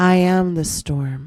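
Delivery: whispered speech. Showing listeners how to say an affirmation: whispering. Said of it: "whisper like you mean it".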